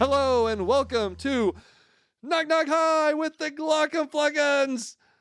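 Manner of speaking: very aggressive, energetic delivery. Opening a podcast episode with a greeting: very aggressive delivery. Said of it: "That was very aggressive".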